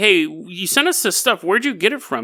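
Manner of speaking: plain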